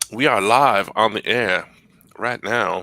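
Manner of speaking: slow, sultry, sexy Southern drawl. Announcing the live show's topic in a sexy Southern accent. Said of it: "I don't know where I got the sexy Southern accent".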